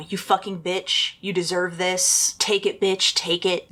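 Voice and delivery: ordinary talk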